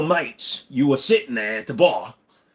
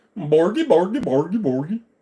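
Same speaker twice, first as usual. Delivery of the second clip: put-on Swedish accent with nonsense syllables; 4 semitones higher than usual. Speaker who can't do an Australian accent tries another: put-on Swedish accent. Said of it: "Can I do a Swedish one?".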